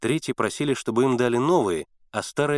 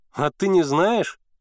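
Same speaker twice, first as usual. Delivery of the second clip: gleeful, gossipy surprise, higher and slower; 6 semitones higher, 3 dB louder than usual. Senka answers Misha's puzzled questions, with gleeful gossipy surprise. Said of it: "С радостным удивлением сплетника".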